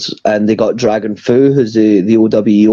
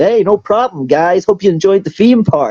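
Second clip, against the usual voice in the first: put-on Californian American accent, much higher pitch. Retelling how a man answered the group's thanks, in a Californian American accent. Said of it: "responds in like the most Californian, like American accent".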